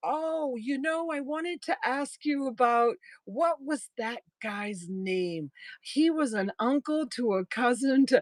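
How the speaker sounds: put-on chatty local Southern accent. Quoting a woman chatting to them, imitating the local accent. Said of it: "I can't do the accent the way they do it down here".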